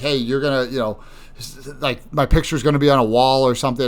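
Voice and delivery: normal talking voice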